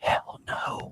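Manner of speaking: breathy, hushed whisper. Answering whether the show will get a review, whispering. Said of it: "Why are you whispering?".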